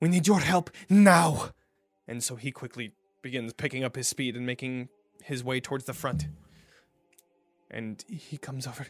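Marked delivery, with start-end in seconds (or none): 0.0-1.5 very loud, high-pitched yell. A narrator reads Miss Belasco calling out again for help, yelling. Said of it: "Miss Belasco yells again".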